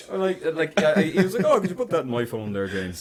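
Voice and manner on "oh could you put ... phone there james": put-on quaint, olde-worlde, old-fashioned dad voice. Retelling what dad said, imitating dad's old-fashioned way of talking. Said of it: "he talks like he's from the fucking seventeenth century".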